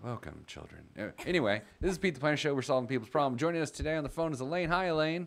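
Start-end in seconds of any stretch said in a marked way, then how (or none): 0.0-0.8 soothing, very quiet, calm TV preacher voice. Imitating a piano-playing TV show guy who talks calm: imitating a calm TV host. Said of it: "and then he just talks calm. He's like".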